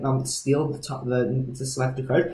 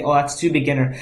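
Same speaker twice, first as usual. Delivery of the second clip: usual speaking voice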